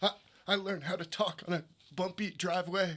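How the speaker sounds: high, mocking put-on voice. Retelling a guy's impersonation of RFK: imitating RFK's voice. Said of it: "doing an impersonation of R F K".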